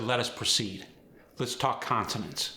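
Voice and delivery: ordinary talk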